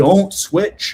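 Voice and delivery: mock, high, fan-style yelling. Retelling watching the game, shouting at the TV: imitating own shout. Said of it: "I'm shouting at the T V".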